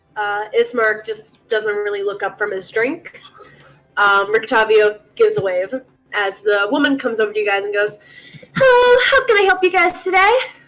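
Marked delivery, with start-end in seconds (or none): 8.5-10.3 overly bright, too-cheerful voice, pitched up. Voicing the serving woman greeting customers at the table: overly happy. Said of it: "Too happy".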